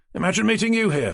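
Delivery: bright, cheerful, very high-pitched voice. Reading a story aloud, a character greets a paramedic: cheerful tone. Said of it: "he said in a cheerful tone".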